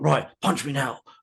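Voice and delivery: gruff, curt, blunt delivery. Retelling a film scene where a police commissioner helps Batman escape: gruff Commissioner Gordon voice. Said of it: "he's talking in such a gruff way".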